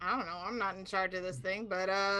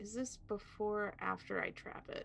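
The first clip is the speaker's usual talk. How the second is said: soft, hushed, whispered aside. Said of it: "I will whisper to Rune".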